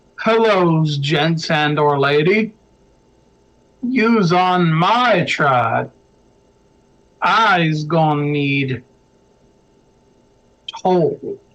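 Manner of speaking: slow, lumbering, rumbling troll voice. Narrator voices a troll addressing the players from behind, loud rumbling troll voice. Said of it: "you hear a loud rumbling voice from behind you".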